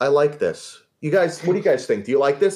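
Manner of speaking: very confident, certain. Retelling how an executive reacted to a drawing: imitating Michael Eisner, very confident. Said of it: "very confidently".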